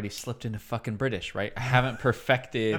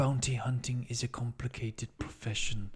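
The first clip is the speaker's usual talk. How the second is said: put-on soft elderly voice; 6 dB quieter than usual. Showing how Arnold Schwarzenegger done old and quiet becomes: quiet Werner Herzog impression. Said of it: "but you do him old and quiet, it becomes a Werner Herzog".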